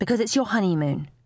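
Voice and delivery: plain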